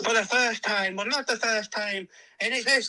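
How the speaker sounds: very high pitched put-on Irish accent. Retelling how someone starts explaining something, put-on Irish accent. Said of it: "you've just put on an Irish accent".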